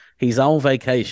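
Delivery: high Southern American accent. Saying vacation the American way, Forrest Gump's mother Southern accent. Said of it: "I sound like Forrest Gump, you know, Forrest Gump's mother, which goes".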